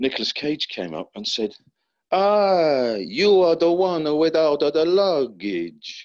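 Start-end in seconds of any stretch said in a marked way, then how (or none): 2.1-6.1 put-on Italian accent, very slow, stretched "ah". Retelling what an actor said on set: imitating Nicolas Cage's Italian accent. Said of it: "speak with an Italian accent".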